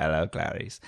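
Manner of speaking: polished, showy star-like delivery. Answering another speaker's joke with an Anthony Hopkins impression. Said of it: "Oh, very good".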